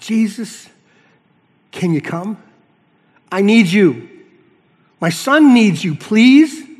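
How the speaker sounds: slow, loud, desperate begging. Speaker plays out how a parent's plea for help would sound, desperate begging. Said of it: "what would it sound like?".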